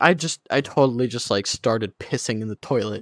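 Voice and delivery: casual offhand tone. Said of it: "he just casually says".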